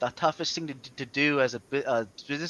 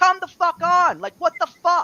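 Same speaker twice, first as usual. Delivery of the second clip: mock very high, shrill, furious yelling outburst; 7 dB louder than usual. Speaker recounts yelling at his wife during cleaning work, retelling a yell. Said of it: "And I'm yelling at her like that".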